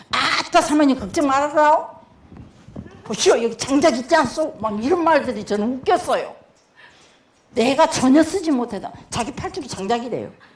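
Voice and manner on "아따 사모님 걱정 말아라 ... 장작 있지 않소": heavy, thick regional Korean dialect throughout. Retelling someone's words to the pastor's wife, in a thick regional dialect. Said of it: "간양말 씨는요 완전 사투리예요".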